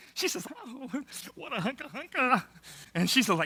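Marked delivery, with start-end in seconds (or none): 0.6-2.4 put-on soft, emotional, overwhelmed girl's gush. Speaker imitates a girl in a hebrew clip: imitating an overwhelmed, emotional girl. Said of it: "She is overwhelmed. I mean, it's very emotional".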